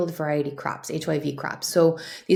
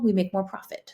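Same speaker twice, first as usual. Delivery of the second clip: ordinary talk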